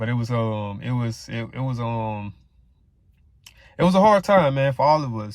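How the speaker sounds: moved, emotional, hesitant halting speech, searching for words. Talking about his grandmother's stroke; getting a little emotional. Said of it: "I'm getting a little emotional, man".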